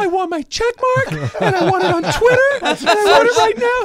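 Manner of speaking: put-on very high, loud, whiny child tantrum voice. Asked to do the messy impression, a speaker acts out a mock child tantrum. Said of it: "Do the messy impression".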